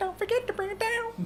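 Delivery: silly, very high, squeaky voice.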